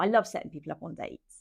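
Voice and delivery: normal talking voice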